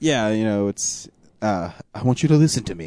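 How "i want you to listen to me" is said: put-on menacing, threatening voice. Quoting the famous phone monologue from the movie: Liam Neeson impression. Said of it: "the way he delivers it is so good".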